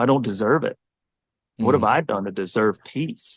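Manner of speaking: ordinary talk, nothing marked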